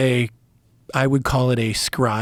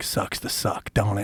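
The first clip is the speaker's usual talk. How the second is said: acted taunting whisper, quieter; 4 semitones lower, 7 dB quieter than usual. Retelling what the speaker whispers to a guy who messed up: retelling a whispered taunt. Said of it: "All I gotta do is whisper to a guy".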